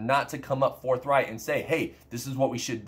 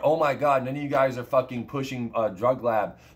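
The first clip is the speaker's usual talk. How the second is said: ordinary talk, nothing marked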